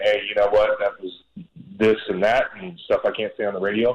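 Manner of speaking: usual speaking voice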